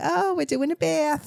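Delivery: put-on thick New Jersey accent. Retelling an old video of bathing a baby: big Jersey accent. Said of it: "with my big Jersey accent".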